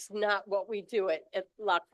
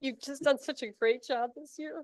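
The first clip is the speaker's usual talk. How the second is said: tearful, crying, pitched-up voice; 5 semitones higher than usual. Toastmasters speaker praising members for their year, crying. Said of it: "I'm sorry, I'm crying".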